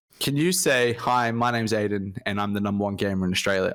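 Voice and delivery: ordinary talk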